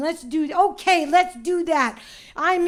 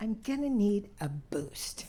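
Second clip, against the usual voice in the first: barely audible, very quiet whisper; 7 semitones lower, 10 dB quieter than usual. Retelling asking someone for help onto a horse: retelling a whisper. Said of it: "and I whisper".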